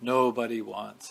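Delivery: put-on grave voice. Retelling what he said to her, in a put-on grave voice. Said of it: "in that kind of grave voice".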